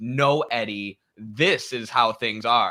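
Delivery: slow, condescending, patronizing lecturing tone. Reading a message that begins with his name, mock-condescending lecturing tone. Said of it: "I always read it in the most condescending way".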